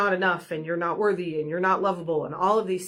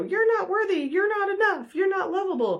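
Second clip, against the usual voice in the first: very high, squeezed-up, tiny-creature voice; 14 semitones higher than usual. Picturing the little yellow minions popping up, in a high-pitched Minion voice. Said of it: "they kind of talk in like high pitched voices".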